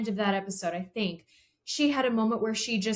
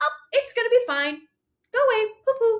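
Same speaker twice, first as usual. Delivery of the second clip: acted very high, loud, breezy, cheery, dismissive chirp; 12 semitones higher, 5 dB louder than usual. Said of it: "this happy, cheery person".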